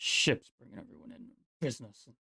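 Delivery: disdainful muttering. Voicing a character complaining about ships: disdainful muttering under breath. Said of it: "starts muttering about ships under his breath".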